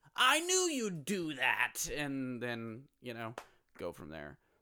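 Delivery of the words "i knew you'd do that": high, loud, slow, swooping, drawn-out comic-book villain voice. Quoting a character to describe a comic book's conflict, Joker voice. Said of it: "that was like a really good Joker voice".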